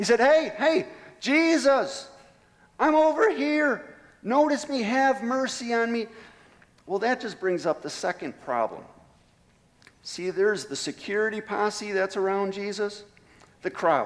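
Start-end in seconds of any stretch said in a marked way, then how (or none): 0.2-6.1 persistent, high, drawn-out shouting, loud over noise. Retelling a blind man calling out to Jesus: acting out a blind man shouting. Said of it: "it doesn't say that he stopped shouting".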